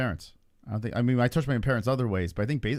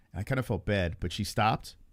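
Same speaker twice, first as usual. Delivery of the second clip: usual speaking voice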